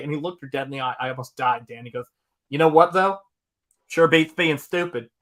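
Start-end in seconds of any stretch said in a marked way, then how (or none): 2.5-5.0 put-on comic Southern accent, dude voice. Retelling a man's reply to a woman's complaint, Southern accent. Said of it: "the funniest Southern dude you've ever heard".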